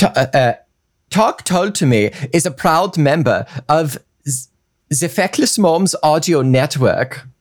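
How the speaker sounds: put-on German accent. Taking turns with a partner on the same line, say it in a German accent.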